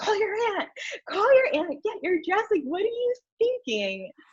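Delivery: very high, swooping, rapid screaming. Retelling the groom screaming at her to get her dress: imitating David screaming. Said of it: "David's screaming at me".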